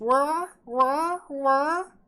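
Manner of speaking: very high, loud, silly cartoony babbling voice. Showing the way they speak, in a stupid cartoony voice. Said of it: "put on my best like uh, stupid uh, cartoony voice".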